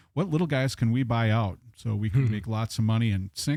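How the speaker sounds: normal talking voice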